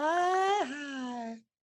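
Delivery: put-on cartoon stoner voice, very high. Greeting, then asking if it's a good impersonation: Towelie voice. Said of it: "Is that a good Towley impersonation?".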